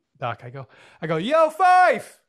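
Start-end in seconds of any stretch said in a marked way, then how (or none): 1.2-2.0 shrill, booming, very loud, high-pitched yelling call. Retelling calling out to someone leaving across the room: imitating own yell. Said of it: "I literally yell out".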